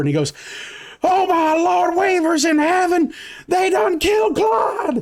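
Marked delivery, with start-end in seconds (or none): 1.0-5.0 screaming out in horror. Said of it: "scream out in horror".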